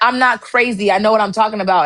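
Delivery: plain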